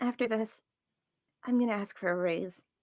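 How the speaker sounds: low voice. Retelling the end of a scene, giving the character's line in a low voice. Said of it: "she says in a low voice".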